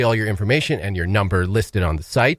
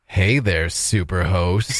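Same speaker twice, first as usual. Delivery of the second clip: put-on seductive automated voice, much lower; 4 semitones lower than usual. Quoting the automated voice that answered her call, mock-seductive automated voice. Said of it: "like kind of like sexy, like seductive tone".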